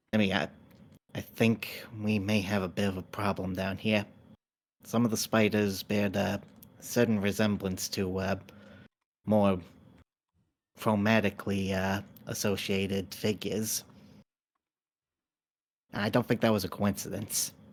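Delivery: a little whisper, hushed. Voicing a character who found a gnome in a spider lair; a little whisper. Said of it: "goes into a little bit of a whisper for this next part".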